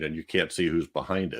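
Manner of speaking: normal talking voice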